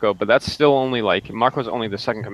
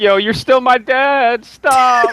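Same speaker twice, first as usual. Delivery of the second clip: sobbing, very high-pitched, very slow, drawn out; 7 dB louder than usual. Retelling a fight scene, imitating the fighter who was crying: mock crying plea. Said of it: "He was, like, crying, like".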